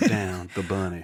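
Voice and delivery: put-on, fake Southern accent. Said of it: "horrible fake Southern accent".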